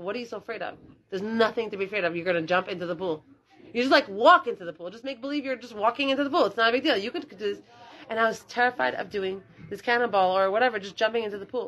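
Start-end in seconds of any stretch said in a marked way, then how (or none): none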